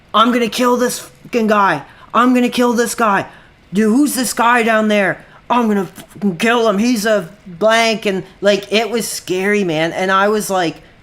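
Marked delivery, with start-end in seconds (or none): 0.1-8.0 acted, half-shouted, mildly angry yell. Retelling a man on his deck threatening a guy below, retelling a man's yell. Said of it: "like yelling".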